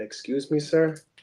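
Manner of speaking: put-on Irish accent in a woman's voice. Retelling what a woman's voice on a recording said: imitating an Irish woman. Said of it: "there's an Irish woman going".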